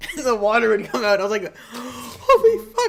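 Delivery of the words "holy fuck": very high, loud, slow laughing stunned shriek. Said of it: "like that".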